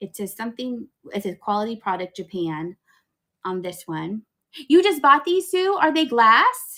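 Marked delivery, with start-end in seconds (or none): 4.7-6.8 high, very loud, thrilled and excited yelling. Asking Sue about the things she just bought, yelling. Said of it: "I'm yelling at you".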